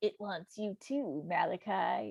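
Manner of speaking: slow, eerie, spooky, creepy voice. Retelling how dad goes around quoting the movie: imitating dad's creepy voice. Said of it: "in this creepy voice".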